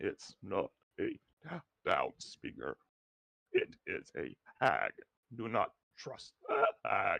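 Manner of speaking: very deep, low, swooping voice. Player voicing a raven passing on a message, voice from within the raven. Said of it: "a voice kind of come from within".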